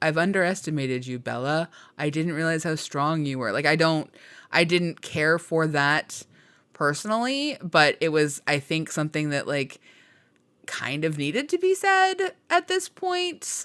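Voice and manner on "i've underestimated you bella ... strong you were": mocking put-on male character voice.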